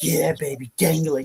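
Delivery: sleazy, slow, creepy, leering tone. Describing what not to sound like, in a mock-creepy tone. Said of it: "it's not like you're being creepy, like".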